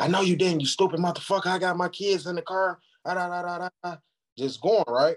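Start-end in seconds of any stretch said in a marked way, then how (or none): 0.0-4.0 play-acted, furious, angry screaming. Retelling a road quarrel where the driver screamed: imitating someone yelling. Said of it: "she yelling, she screaming".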